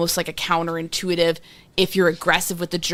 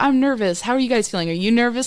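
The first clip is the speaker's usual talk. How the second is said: chummy, personable banter tone, pitched up; 5 semitones higher than usual. Retelling how a lawyer spoke to the jurors, imitating a personable, comedian-like manner. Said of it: "Very personable".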